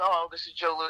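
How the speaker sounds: ordinary delivery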